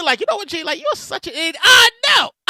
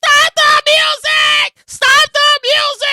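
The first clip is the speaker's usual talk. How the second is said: shrill, very slow, very high screaming cry; 10 semitones higher, 4 dB louder than usual. Retelling a story about a lady who suddenly started screaming, imitating a lady screaming. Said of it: "this lady starts screaming".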